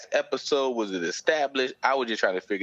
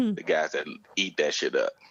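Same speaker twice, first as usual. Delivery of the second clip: ordinary talk, nothing marked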